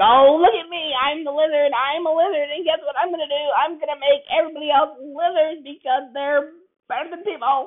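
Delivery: very high, loud cartoon villain voice. Describing a darker film's lizard villain, the speaker acts it out in a cartoon villain voice. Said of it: "Kind of feels like Saturday morning cartoon villain. Has that type of voice".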